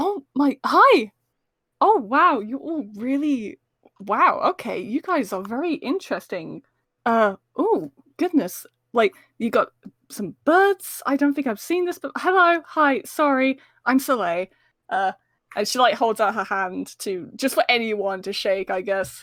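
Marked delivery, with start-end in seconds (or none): 0.0-14.5 thrilled, excited character voice. Voicing a character who walks up to the group grinning: excited character greeting. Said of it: "a really excited grin appears on her face".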